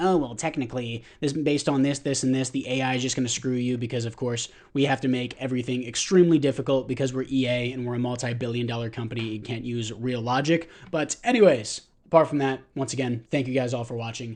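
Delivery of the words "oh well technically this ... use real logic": usual speaking voice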